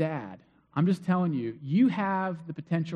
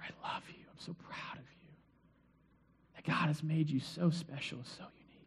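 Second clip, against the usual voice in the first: hushed, very quiet, very soft breathy whisper; 11 dB quieter than usual. A parent shows how they speak to their children, in a whisper. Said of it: "Then I whisper".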